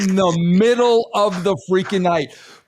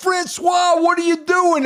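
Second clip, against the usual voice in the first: acted scared voice, much higher; 11 semitones higher than usual. Retelling sitting in the passenger side as the driver races, retelling being scared. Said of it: "I'm there scared to death".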